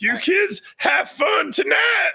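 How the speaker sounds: high yell, dragged out long. Doing an impression again for another speaker: Bobcat Goldthwait voice. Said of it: "I'll do Bobcat Goldthwait again".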